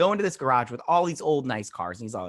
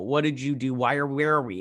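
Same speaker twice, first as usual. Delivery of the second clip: ordinary talk, nothing marked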